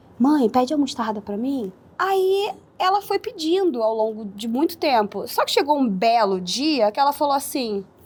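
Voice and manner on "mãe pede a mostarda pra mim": shy, timid, embarrassed small voice. Retelling asking mom to order for her, imitating shy younger self. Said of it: "Eu tinha vergonha de falar".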